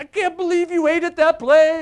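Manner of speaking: put-on slight, high, slow, loud Yiddish accent.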